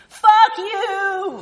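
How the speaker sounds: yelling, high pitched.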